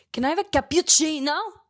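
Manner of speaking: badly done put-on Italian accent. Retelling mom ordering at a coffee shop: imitating mom's fake italian accent. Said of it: "What accent is that?".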